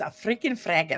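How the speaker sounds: put-on heavy German accent. Imitating a friend's mother who avoided swearing: imitating heavy German accent. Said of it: "with, you know, a heavy German accent".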